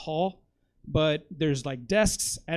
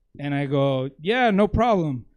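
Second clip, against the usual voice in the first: ordinary talk, nothing marked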